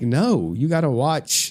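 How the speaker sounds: put-on slow, insistent young girl voice. Retelling the daughter refusing a nap, imitating daughter. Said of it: "She'd be like".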